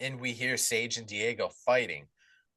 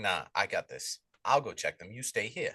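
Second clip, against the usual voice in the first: acted, firm, pushy, very insistent tone; 2 semitones lower than usual. Retelling a film character insisting on checking the breakers himself: imitating someone being very insistent. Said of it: "Will gets very insistent".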